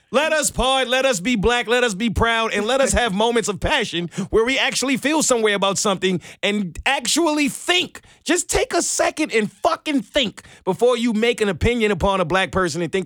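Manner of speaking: angry ranting. Ranting at a listener who then comments on the tone; angry ranting. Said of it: "That was angry".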